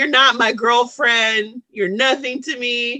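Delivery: ordinary delivery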